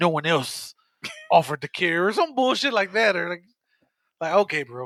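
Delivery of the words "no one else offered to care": edgy tough-guy delivery. Retelling a character's reply while recapping an episode: mock edgy voice. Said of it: "his edgy ass".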